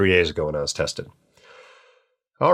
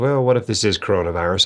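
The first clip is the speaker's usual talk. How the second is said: ordinary delivery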